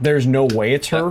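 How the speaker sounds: normal talking voice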